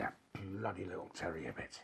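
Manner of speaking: angry muttering. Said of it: "what are you mumbling and going on about?".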